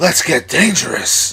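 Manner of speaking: put-on cartoon duck hero voice. Friends trading cartoon voice impressions, one demonstrates: Darkwing Duck voice. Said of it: "You should try Darkwing Duck".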